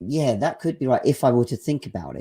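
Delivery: ordinary talk, nothing marked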